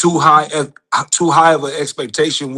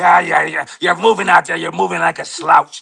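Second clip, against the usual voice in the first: put-on gruff coach voice, higher pitch; 3 semitones higher than usual. Retelling how the coach Mickey motivated Rocky: imitating Mickey coaching Rocky. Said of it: "That's how he motivated him".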